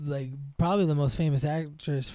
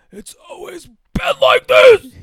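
very loud, very high, ferocious, furious shout; 17 dB louder than usual. Quoting a movie character yelling in his mother's face: imitating a ferocious loud yell. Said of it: "he just says it with such ferocity and, like, so loud".

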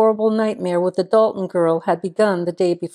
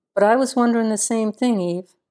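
usual speaking voice

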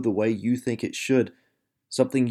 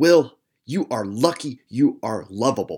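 scolding tone, words squeezed through clenched teeth; 3 dB louder than usual. Recalling what his mother said to him as a child, imitating her through clenched teeth. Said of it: "say through clenched teeth".

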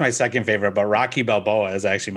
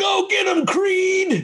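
very high, very slow, drawn-out holler; 3 dB louder than usual. Retelling what a guy in the back of the theater yelled: imitating someone yelling. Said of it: "some guy in the back yells".

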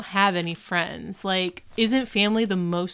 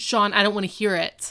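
mock stern, fed-up, angry dad voice. Retelling a TV scene where the teacher stops the fighting boys: imitating Mister Turner angry like a dad. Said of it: "he's, like, dad angry".

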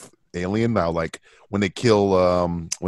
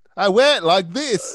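very high, bad put-on British accent; 13 semitones higher than usual. Answering how one wears a British accent: put-on British accent. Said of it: "How do you wear a British accent?".

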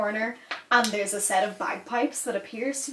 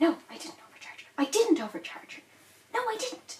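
very high, hushed mutter under the breath; 10 semitones higher, 4 dB quieter than usual. The shopkeeper speaks off to the side, toward the back of the shop: Garmando muttering quietly. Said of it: "speaking in such a low voice".

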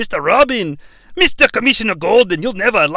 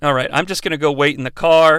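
ordinary talk, nothing marked

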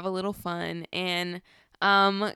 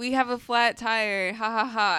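put-on voice laughing through the words; 3 semitones higher than usual. Retelling how Keegan reported a flat tire: imitating Keegan laughing while talking. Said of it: "Why are you laughing?".

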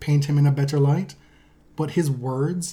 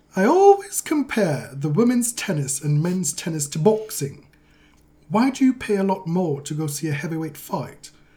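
slow, fake received pronunciation, posh British; 2 semitones higher than usual. Asked to do received pronunciation, quoting a remark in put-on posh British RP accent. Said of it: "Can you do the received pronunciation? ... I'll conjure something".

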